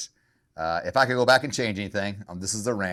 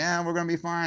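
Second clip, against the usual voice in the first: pitched-up, forced false cheer over held-back tears; 10 semitones higher than usual. Retelling a shopping trip with two kids: imitating smiling while holding back tears. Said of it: "you're smiling, trying not to cry".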